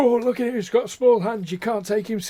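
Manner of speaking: put-on Yorkshire accent. Mocking people who jeer about small hands, in a Yorkshire accent. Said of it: "doing a Yorkshire accent for the Americans".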